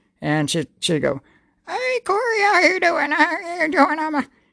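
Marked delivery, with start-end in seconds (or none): 1.7-4.0 put-on very high-pitched granny voice. Retelling how an ex did a voice for a great-grandmother: Sis voice as the ex did it. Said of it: "do a voice for Sis".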